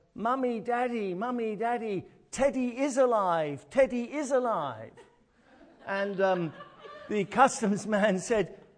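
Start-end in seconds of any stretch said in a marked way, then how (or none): 0.2-4.9 put-on little boy voice, high and loud, stretching out "daddy". Speaker retelling a little boy at customs calling to his parents, retelling a child's loud yell. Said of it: "suddenly yells out in a loud voice".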